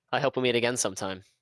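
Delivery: bone-dry, utterly flat deadpan delivery. A departing worker says goodbye to the player while leaving: deadpan. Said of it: "Said with the most deadpan voice".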